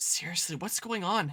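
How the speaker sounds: hushed whisper. Hiding from someone who is coming, asking a companion: whispering. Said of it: "I'll whisper".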